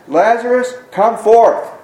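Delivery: called out loudly in a high-pitched voice. Preacher reading Jesus calling to Lazarus, in a loud voice. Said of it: "he said in a loud voice".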